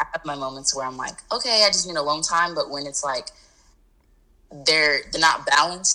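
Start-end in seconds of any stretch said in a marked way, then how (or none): none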